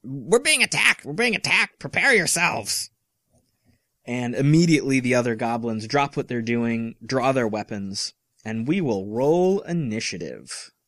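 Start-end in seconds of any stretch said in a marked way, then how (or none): 0.1-2.9 high, shrieked, alarmed goblin voice. A goblin, just hit in the chest, jumps up and alerts the other goblins, shrieking out. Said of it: "he shrieks out in Goblin".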